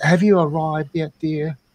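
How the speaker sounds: put-on British accent. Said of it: "practice with the British accent".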